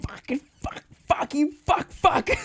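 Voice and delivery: very high, pissed-off, angry swearing spree. Retelling swearing inside the car: imitating own cursing in the car. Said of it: "he probably saw me going".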